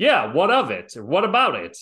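put-on loud New Jersey accent. Recapping a hospital scene, answering a man's question, Michael Mancini New Jersey accent. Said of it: "he responded with his New Jersey accent".

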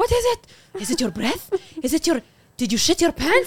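put-on Arabic-accented voice.

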